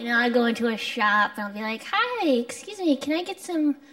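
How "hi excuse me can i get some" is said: put-on grating, high, childlike little-girl voice. Retelling asking a shopkeeper for something, imitating own childlike voice. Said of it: "my own voice doesn't command the respect".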